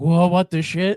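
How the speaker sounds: put-on jolted, caught-off-guard, surprised exclamation. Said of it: "she's like".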